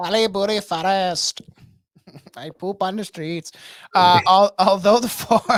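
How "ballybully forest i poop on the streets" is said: put-on Indian accent. Mimicking how another man keeps doing a voice, in a put-on Indian accent. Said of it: "It's like a, a Western Indian dude".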